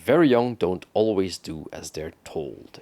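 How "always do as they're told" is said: ordinary talk, nothing marked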